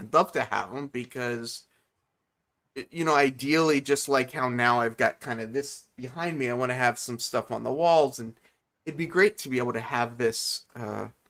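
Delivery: ordinary talk, nothing marked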